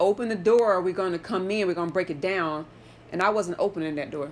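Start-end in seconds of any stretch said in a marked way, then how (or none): none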